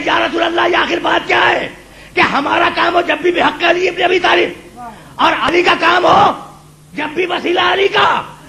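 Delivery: calling out. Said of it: "کسی نے پکار کے کہا".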